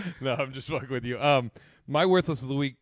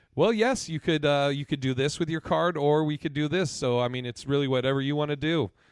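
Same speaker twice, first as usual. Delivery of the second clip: snide, weary, done-for-the-day put-on politeness. Retelling a bank worker's reply: imitating a "fuck you" tone. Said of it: "using a "fuck you" tone".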